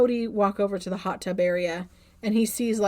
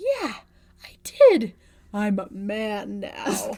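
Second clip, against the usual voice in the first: dropped, lowered voice, very slow. Retelling a movie scene to another speaker, Floyd's dropped voice. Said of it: "his voice drops. It's not high and squeaky anymore".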